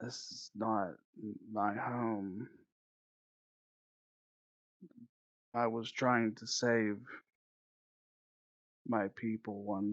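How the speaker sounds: distant, barely-there, very faint, slow, far-off voice. Describing to listeners what they hear, voicing something very faint and far away. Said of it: "you hear something very very faint".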